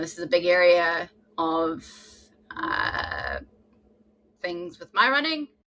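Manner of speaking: heartfelt, feeling rising, pitch swinging wide. Talking about their own running journey, unexpectedly getting emotional. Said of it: "I don't know why I'm getting emotional".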